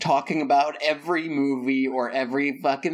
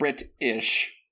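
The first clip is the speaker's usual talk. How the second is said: slow Brit-ish, ish split off and stressed. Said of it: "your Britishness is more of just an ish".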